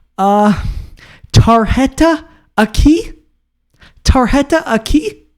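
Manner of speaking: very high, slow, hesitant and halting, broken delivery. Retelling how an aunt asked to pay by card: imitating the aunt asking. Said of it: "frantically pointing at it, and she's like".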